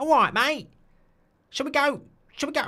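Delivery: put-on Essex accent, pitched very high. Asked to do an Essex accent, giving it a go: Essex accent. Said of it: "do an Essex accent".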